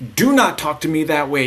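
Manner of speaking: loud, hostile, aggressive, combative tone. Speaker showing how not to talk to your kids: aggressive tone. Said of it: "if you were to use a more aggressive tone".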